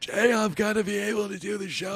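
weak, nearly gone sick voice. Retelling own phone call made while sick: imitating own sick voice with no voice. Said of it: "You sound like you were dying".

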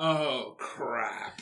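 very drawn-out, low, stretched-out, milked delivery. Speaker quotes Gordon's reaction from a TV episode, very drawn-out 'oh, crap'. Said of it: "very, like, drawn out".

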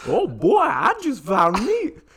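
put-on slow, sing-song, very high, loud old-timey prospector voice. Asked about one of his voices, the speaker does a prospector voice. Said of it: "It's just a prospector".

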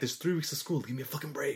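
raspy, hoarse, hushed whisper. Recapping a scene where a man whispers to a woman, retelling a hoarse whisper. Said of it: "he's whispering to her hoarsely".

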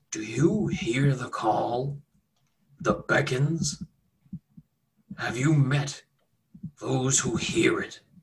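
orc monster voice. Game master voicing an orc who slides over to the players: orc voice. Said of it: "the orc, again, ... and he says".

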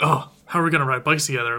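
put-on excited character voice. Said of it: "she's getting all excited, like".

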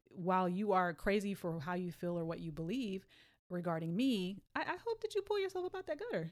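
ordinary delivery

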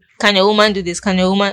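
ordinary delivery

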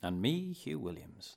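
professional put-on broadcast radio announcer voice. Podcast co-host introducing himself at the start of the show, special radio voice. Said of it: "I put like a special radio voice on".

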